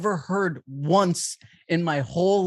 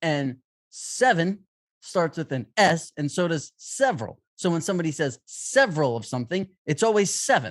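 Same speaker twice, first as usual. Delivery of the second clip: usual speaking voice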